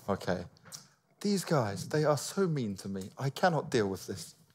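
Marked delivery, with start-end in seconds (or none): 1.2-4.3 posh, refined, upper-crust, well-to-do voice. Redoing an impression of Stas watching them from his hotel room, posh Stas impression. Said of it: "It didn't sound posh enough".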